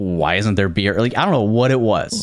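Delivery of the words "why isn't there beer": acted, very stern tone with the voice raised. Retelling a player's demand to a non-player character for beer: imitating Ryan's stern demand. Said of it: "It was a very stern".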